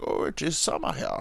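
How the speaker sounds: put-on German accent, hushed, soft and breathy. Talking about cold Russia, attempting an impression, in a German accent. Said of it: "Oh no, that's German".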